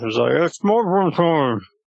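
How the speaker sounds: muffled talk through mouthful of food, slightly high. Speaker eats one while talking, talking with muffled mouth. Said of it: "with a bit of a muffled mouth".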